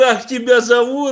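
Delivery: put-on yelling. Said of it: "я ему туда кричу".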